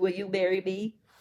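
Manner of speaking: ordinary delivery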